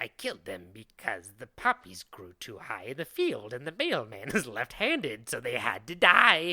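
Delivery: crazed, unhinged voice, loud and swooping. Imagining what the killer would say today, doing a crazy Eugene Butler impression. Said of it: "my Eugene Butler crazy impression".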